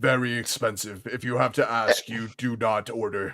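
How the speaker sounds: quiet orc voice with broken caveman grammar. Game master voicing the orc bartender answering a customer, Blarg the orc bartender voice. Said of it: "And you guys make your way to the bar and see a large gray-skinned orcish man. / And you guys make your way to the bar and see a large gray-skinned orcish man. He doesn't have a shirt on, but he does".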